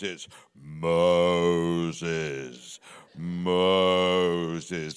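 very deep, slow bass voice, one word stretched out. Speaker imitates how God speaks in films, slow deep bass God voice. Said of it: "God speaks very slowly in a deep bass voice".

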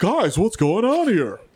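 animated cat character voice. Acting out a cartoon cat arriving on the scene: Top Cat voice. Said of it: "The actual Top Cat comes through like".

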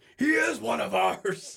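very high, rough, drawn-out yell. Retelling how the coach yelled at the other team: Coach K voice yelling. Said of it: "he started yelling, like".

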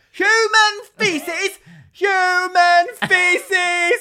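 very loud, very high, drawn-out shriek. Retelling how she ran around the street, imitating someone screaming. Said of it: "And she was like screaming this".

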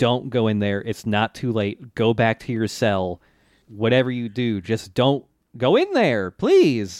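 plain

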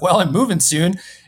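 imitated playful, joking tone. Speaker retells answering someone's offer to come down: retelling a joking remark. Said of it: "And I said it jokingly".

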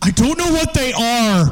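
mock very high, shrill, exasperated, whiny childlike shriek. Retelling a film scene where a man asked for bolt cutters answers, retelling a screamed reply. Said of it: "he screams".

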